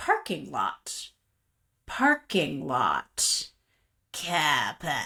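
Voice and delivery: put-on slow, sing-song, drawn-out Australian accent, little kid voice. Retelling hearing a child talk to himself in the back seat; imitating a child's Australian accent. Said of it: "he has an Australian accent".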